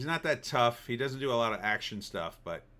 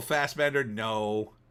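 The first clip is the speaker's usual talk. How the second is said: plain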